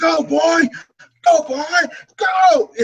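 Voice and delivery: put-on shrill, very high-pitched yell. Recalling watching a game behind their dad, retelling dad's yell. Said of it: "And he's yelling".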